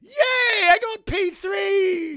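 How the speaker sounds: very high, slow, drawn-out put-on cheery cry. Acting out a driver celebrating his grid spot: imitating Lando's mock cheer. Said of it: "Lando's like".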